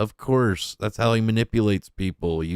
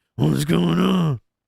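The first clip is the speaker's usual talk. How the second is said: mock gruff voice, louder; 8 semitones higher, 4 dB louder than usual. Mimicking how an acquaintance talks: imitating someone's gruff put-on voice. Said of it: "gruff like that".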